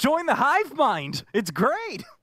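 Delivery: very high, loud, flamboyant voice with swooping pitch. Discussing a show with others, doing Ethan in a high-pitched flamboyant voice. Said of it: "that's my Ethan voice. It's just very high pitched, very flamboyant".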